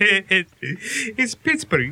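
thick Greek accent over Pittsburgh speech, high and slow.

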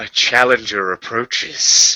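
hushed whisper under the breath. As a commander thrusts her spear and cracks the earth, the narrator says: whispering. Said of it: "I whisper".

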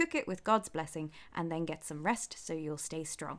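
plain reading voice

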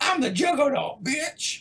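very high-pitched put-on voice. Responding to another player, the speaker shows how the Juggernaut sounded: Juggernaut impression. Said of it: "That's what he sounded like".

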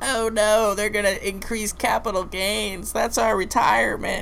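put-on little old lady voice, very high. Recalling a commercial, the speaker acts out its little old lady: little old lady impression. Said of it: "Do you like my old lady impression?".

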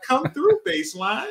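very high-pitched, loud shouting voice. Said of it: "I hear her voice and shit".

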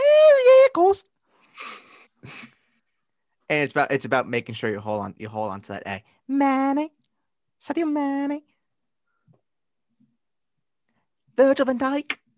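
Liverpool Scouse accent, swooping, pitched very high. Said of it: "a pretty good Scouse accent".

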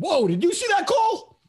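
very high-pitched scream. Retelling own reaction during the whole game: imitating own screaming. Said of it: "the entire game I'm screaming".

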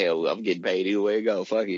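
normal talking voice

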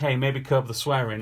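ordinary delivery

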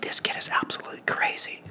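soft, unvoiced whisper. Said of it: "whispering to each other".

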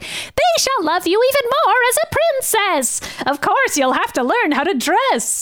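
high, silly, goofy put-on voice. Quoting a character's line as the voice actress performed it, funny voice. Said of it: "the voice actress is just like doing a funny voice here".

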